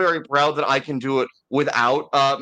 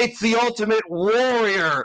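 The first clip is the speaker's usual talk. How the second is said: intense wrestling promo voice, pitched higher; 8 semitones higher than usual. Delivering a mock wrestling promo as a parody: Ultimate Warrior parody. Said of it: "not a bad parody of Ultimate Warrior speak".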